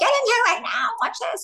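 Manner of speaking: acted-out, very high, urgent shrieking scream. Retelling calling a daughter to watch television: imitating own past scream. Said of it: "I literally screamed my daughter's name and go".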